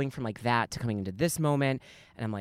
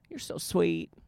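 put-on cute little Southern accent, pitched up; 7 semitones higher than usual. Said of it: "in like the cutest little Southern accent".

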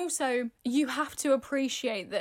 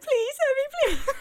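put-on, very high, loud, tearful crying plea; 14 semitones higher, 5 dB louder than usual. Acting out a hypothetical hostage plea to the listener, imitating crying. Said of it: "I'm crying".

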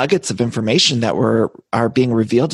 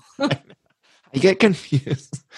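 high voice, laughing through the words; 7 semitones higher than usual. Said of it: "I'm laughing so hard".

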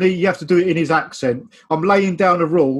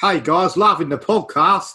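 put-on South African accent. Reading out a listener's message on the podcast, in a south african accent. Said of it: "South African now".

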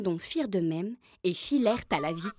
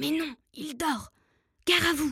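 hushed whisper, higher; 8 semitones higher than usual. A third turkey answers the others about the cat, whispering. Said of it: "Chuchota un troisième dindon".

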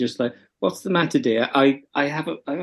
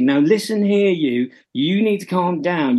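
put-on slow, sassy little-kid voice; 4 semitones higher than usual. Describing TikToks of a kid talking to their mum, imitating a sassy kid. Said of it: "in a very sort of sassy".

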